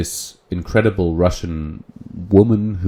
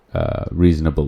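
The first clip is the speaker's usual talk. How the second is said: ordinary talk, nothing marked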